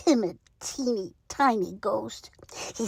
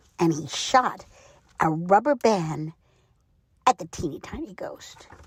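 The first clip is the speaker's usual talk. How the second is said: usual speaking voice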